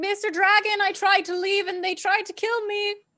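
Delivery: very high, loud shouted yell. Playing a character running down stairs, calling to the dragon: yelling. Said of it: "and I'm yelling".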